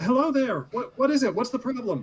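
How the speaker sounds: very high voice calling out across a distance. Voicing a character calling back to a stranger: calling back from a distance. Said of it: "And just kinda calls back".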